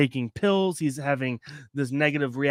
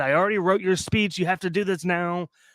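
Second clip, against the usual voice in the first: put-on yell, higher pitch; 4 semitones higher than usual. Retelling how a character yelled at the president: imitating someone yelling. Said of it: "yelling at the president".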